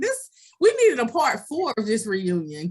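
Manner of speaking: ordinary delivery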